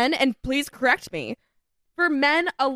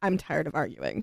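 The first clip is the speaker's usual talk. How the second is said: barely-there, soft, eerie, creepy half-whisper; 10 semitones lower, 7 dB quieter than usual. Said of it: "in really, really quiet, creepy whisper, [name] goes".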